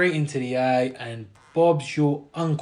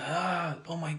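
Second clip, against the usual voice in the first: higher-pitched mock scream of pain; 3 semitones higher, 9 dB quieter than usual. Retelling how an injured fighter reacted: imitating Bilal screaming. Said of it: "He started screaming".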